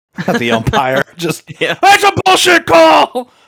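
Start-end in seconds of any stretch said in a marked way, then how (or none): 1.2-3.3 very loud, very high, shrill, angry yelling. Acting out a drunk dad at a kid's baseball game, yelling at the refs. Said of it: "I'm just yelling at the refs".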